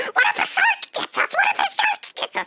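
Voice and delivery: mock squealing cry, pitched very high. Retelling being dipped into the water while parasailing: imitating her own scream. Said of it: "and I scream, saying".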